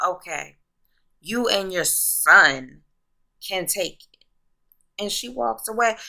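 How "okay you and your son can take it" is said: put-on, sassy delivery with attitude. Retelling a TV scene, quoting Angela's reply: retelling a line said with attitude. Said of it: "with the attitude".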